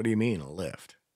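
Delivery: normal talking voice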